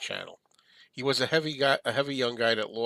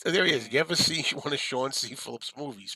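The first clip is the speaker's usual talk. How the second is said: normal talking voice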